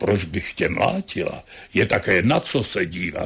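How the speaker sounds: put-on deep woman's voice. Speaker retelling a woman's reply to his confession: imitating a deep female voice. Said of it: "měla takový hluboký hlas a říkala".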